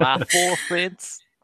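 joking Texan accent. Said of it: "making fun of a, like, a Texan accent".

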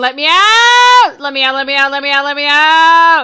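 very loud, high, begging cry of a dragon. Voicing the dragon as the players ask what it says, trapped dragon voice. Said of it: "It's just going".

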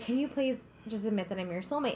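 ordinary delivery

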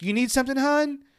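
put-on shouted holler, pitched way up. Retelling how the front desk lady called from outside: imitating someone shouting. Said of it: "and she shouts".

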